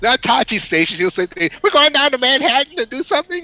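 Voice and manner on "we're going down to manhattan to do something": very high-pitched, cracking voice. Imitating an actor's line for a cartoon role: imitating Mark, voice cracking. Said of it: "his voice cracked".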